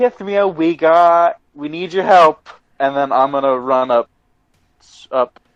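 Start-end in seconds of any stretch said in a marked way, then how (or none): 0.0-2.5 loud in-character yell. Voicing a character calling the healer for help: character yelling for help. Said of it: "I'm going to yell".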